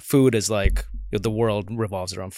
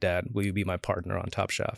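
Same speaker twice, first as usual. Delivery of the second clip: put-on, sugary, very sweet tone; 7 dB quieter than usual. Retelling a daughter asking to be partners: imitating someone speaking sweetly. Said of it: "very sweetly".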